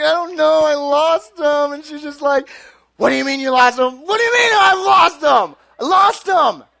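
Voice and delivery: put-on crying voice. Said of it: "But I'm crying".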